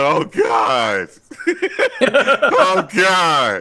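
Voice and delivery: play-acted weeping, very slow and drawn out. Retelling how someone reacted to the flashbacks: imitating someone crying. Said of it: "clearly crying".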